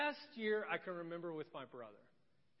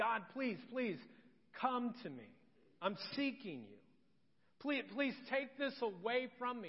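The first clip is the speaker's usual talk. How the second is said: put-on, pitched-up, imploring, begging pleading; 5 semitones higher than usual. Acting out Paul's prayer to God: acted pleading prayer. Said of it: "you're pleading. And this is exactly what Paul".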